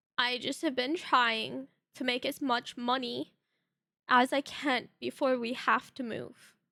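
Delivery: play-acted, near tears, teary voice. Retelling own words to someone after being sick: retelling own teary-eyed words. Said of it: "I looked at her teary-eyed".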